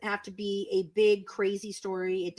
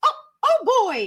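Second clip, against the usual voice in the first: high-pitched, loud squeaked-out voice; 13 semitones higher, 10 dB louder than usual. Retelling what a man suddenly said, in a Mickey Mouse voice. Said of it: "like Mickey".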